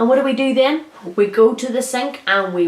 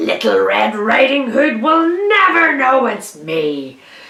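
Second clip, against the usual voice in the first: whole line snarled out; 3 dB louder than usual. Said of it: "He snarled".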